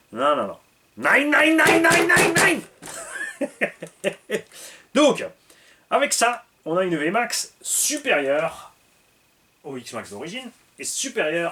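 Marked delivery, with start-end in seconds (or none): 0.9-4.4 very high-pitched, thick, fake German accent. Joking he is not from that crowd, saying no in a strong german accent. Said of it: "fort accent allemand".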